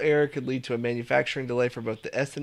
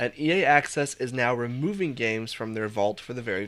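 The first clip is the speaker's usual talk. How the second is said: ordinary delivery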